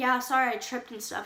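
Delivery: ordinary talk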